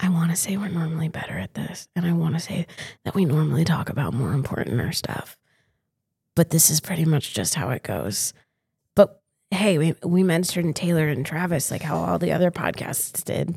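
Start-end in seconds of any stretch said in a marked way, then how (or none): 0.0-8.3 whispered aside, much lower pitch. Podcast host turns aside to address the listener directly, whispering to the listener. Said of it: "Now I'm whispering to you".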